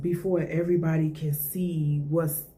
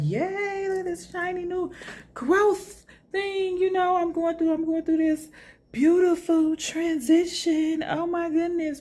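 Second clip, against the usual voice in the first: mock gushing excitement, higher; 13 semitones higher than usual. Acting out someone eager to share their new growth: imitating excited gushing. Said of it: "Yes, you are excited".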